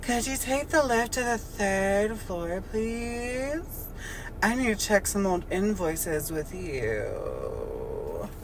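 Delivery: sing-song, swooping airhead voice. Telling a story, playing Samantha speaking to Bill: Samantha's dumb blonde voice. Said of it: "I'm doing like my dumb blonde voice".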